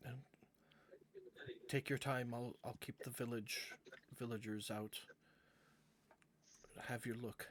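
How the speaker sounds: hushed voice. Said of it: "in a hushed voice".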